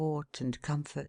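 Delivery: plain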